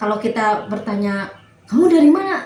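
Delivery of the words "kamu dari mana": high, loud, harsh, demanding tone. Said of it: "dengan nada yang tinggi".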